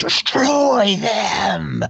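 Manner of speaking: very high, raspy, rough villain screech. Narrating the battle, voicing Frostblood: screaming as Frostblood. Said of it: "Frostblood is like screaming".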